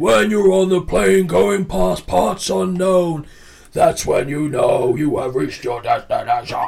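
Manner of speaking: big, loud wrestling promo-style delivery. Acting out what a man would say in his promos, in a loud wrestling promo impression. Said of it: "because it's so loud".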